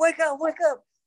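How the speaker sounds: put-on shrill shouting, pitched very high. Retelling finding a man passed out in a mascot costume, re-enacting the yell. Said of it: "I'm like yelling his name".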